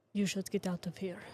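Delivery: barely-there, low-key, quietest possible murmur. A character speaks over the shoulder to a woman, in a very quiet tone. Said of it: "in the quietest tone that I know".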